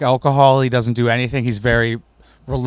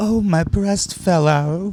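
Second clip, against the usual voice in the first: very slow, high, drawn-out put-on lady voice; 7 semitones higher than usual. Retelling a comedy bit where a lady offers lemonade: put-on lady voice. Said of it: "he pretends to be the lady outside the house".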